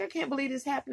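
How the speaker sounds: put-on tearful voice. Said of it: "I'm just in tears and crying".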